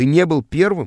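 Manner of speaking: ordinary delivery, nothing marked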